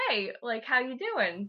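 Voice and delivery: mock sarcastic tone. Retelling a work story, the speaker imitates a sarcastic coworker's mock-sarcastic greeting. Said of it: "who was like real sarcastic".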